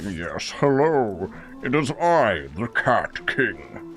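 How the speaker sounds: very slow, drawn-out demonic cat voice. A gamer wishes for a cat that sounds like a demon, voicing it. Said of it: "a cat that sounds like a demon".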